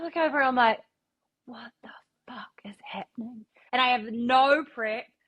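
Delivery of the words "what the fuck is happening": stunned, breathy, hushed whisper of disbelief. Retelling an artist walking into the studio: retelling own shocked surprise. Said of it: "genuinely surprised".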